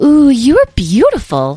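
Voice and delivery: very high, swooping, enchanted, delighted exclamation. Narrator reading a character's line to the fairies in a fountain: exclaimed. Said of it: "exclaimed Edwin".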